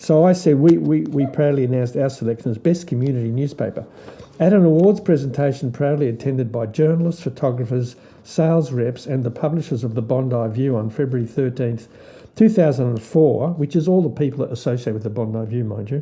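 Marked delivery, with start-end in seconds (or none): none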